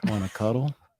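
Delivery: seductive tone. Pitching a tagline for a cuddle company: seductive. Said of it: "I'd say it seductively".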